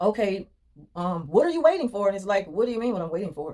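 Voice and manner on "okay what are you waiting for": mock irate, very angry, demanding, challenging tone. Speaker acting out how others question them while they stand waiting, imitating a very angry tone. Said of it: "they question you in a very angry tone".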